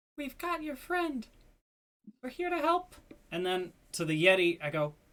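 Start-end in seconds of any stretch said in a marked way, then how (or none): 0.2-3.0 hushed, whispering voice, higher. Reaching out to a halfling through psychic whispers: whispering. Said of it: "I whisper to the halfling".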